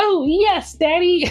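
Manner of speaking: very high, small, squeaky cartoon-kid voice. Quoting a meme clip from a children's show: Caillou voice. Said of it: "an actual clip of Caillou being like".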